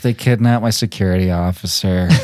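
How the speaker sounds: mock deadpan, flat, low, no emotion at all. Quoting Picard's robotic reaction to an emergency, flat and emotionless. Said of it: "no emotion".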